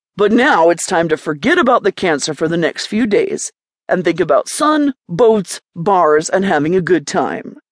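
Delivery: ordinary delivery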